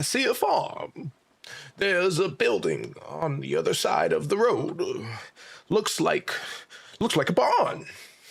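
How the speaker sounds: put-on high-pitched elderly woman voice. Speaker in a role-play slips back into character: old lady voice. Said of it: "I'm the old lady again".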